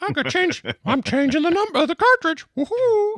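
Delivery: very high-pitched cartoon-style voice. Joking about a little man inside swapping game cartridges: Mickey Mouse voice. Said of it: "I don't know why it's Mickey Mouse".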